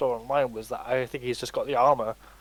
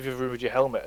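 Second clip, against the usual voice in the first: flat, emotionless monotone with zero feeling. Describing the Armorer from Mandalorian: monotone Armorer voice. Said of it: "there's no emotion to her voice at all".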